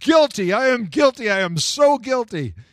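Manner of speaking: acted shouting. Retelling running back to the policeman who pulled him over, retelling a yell. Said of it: "I was yelling".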